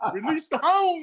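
imitated yell. Retelling what a teammate yelled in the tunnel before a game: imitating someone yelling. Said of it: "I remember you yelling".

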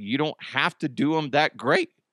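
voice cracking. Explaining a Guinness World Records ruling, voice cracking. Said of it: "My voice cracked".

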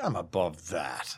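low, slow, snooty, above-it-all voice.

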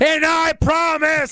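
very high, fired-up, fiery, passionate delivery. Speaker recalls Bray sounding passionate instead of monotonous: mock-passionate Bray impression. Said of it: "he was very passionate".

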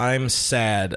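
ordinary delivery

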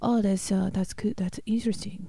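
put-on Swedish accent. Retelling how a man reacted to your work, in a Swedish accent. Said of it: "that's your Swedish accent".

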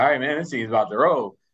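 plain

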